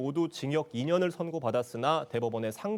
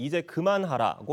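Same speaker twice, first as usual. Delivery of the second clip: plain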